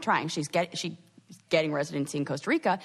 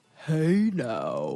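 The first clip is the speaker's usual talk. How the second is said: deepest possible voice, bottom of vocal range; 4 semitones lower than usual. Taking your turn after being asked for your deepest voice, use your deepest voice. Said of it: "Your turn to yours".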